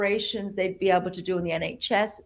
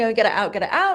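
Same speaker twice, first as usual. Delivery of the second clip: mock screaming outburst, repeated; 2 semitones higher, 5 dB louder than usual. Retelling what a woman screamed as he pulled the thing out, imitating someone screaming. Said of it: "she was screaming".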